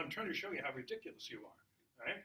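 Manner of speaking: plain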